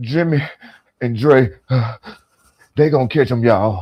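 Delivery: mock breathless, out-of-breath delivery. Retelling how someone ran out of breath: imitating someone out of breath. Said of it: "He ran out of breath".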